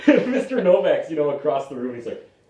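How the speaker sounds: plain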